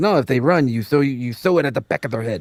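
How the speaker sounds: fake Mexican accent drifting into a Russian slip. Retelling what a police officer said, in an attempted mexican accent. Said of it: "went slightly Russian while trying to do a, a Mexican accent".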